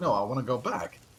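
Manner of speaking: put-on sobbing, tearful crying child voice. Retelling a story where a kid begs to go back: imitating a crying kid. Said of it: "the kid is still crying like".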